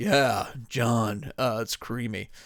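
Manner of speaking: really deep, low bass delivery. Act out Creamy leaving John a voice message, in Creamy's really deep voice. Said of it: "he had just had this really deep voice".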